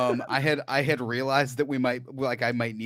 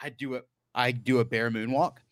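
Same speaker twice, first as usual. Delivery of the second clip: ordinary talk, nothing marked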